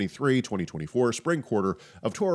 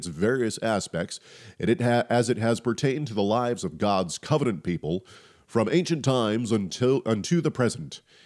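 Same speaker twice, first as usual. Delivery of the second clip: TV news commentator style delivery. Host records a blurb while having a cold: like a TV news commentator. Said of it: "you were like the news commentator".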